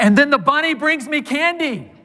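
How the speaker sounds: put-on very high, loud, excited child's yell. Retelling a four-year-old answering his dad's repeated question, retelling a child's loud yell. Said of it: "yells out in a loud voice".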